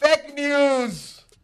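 very loud, very high, shrill yell, words stretched. Introducing the next topic of discussion, yelling. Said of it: "Stop yelling".

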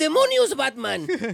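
very high, very loud dubbed-cartoon Spanish voice. Mocking how Spanish-dubbed cartoons always sound: Spanish cartoon dub voice. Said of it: "They always sound like that".

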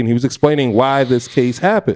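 usual speaking voice

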